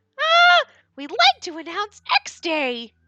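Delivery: high, loud, slow squeaky voice. Reading a game scene aloud, the speaker switches to a Mickey Mouse-style Monokuma voice. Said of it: "our Mono Mouse voice".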